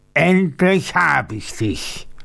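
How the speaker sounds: furious, held-in, drawn-out voice. The man-eater finally stands before his terrified victim, roaring. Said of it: "brüllte er".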